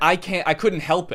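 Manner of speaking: ordinary talk, nothing marked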